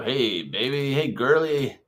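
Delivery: creepy, leering called-out voice. Acting out catcalls outside a high school: imitating a creepy catcaller. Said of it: "that's gonna be creepy".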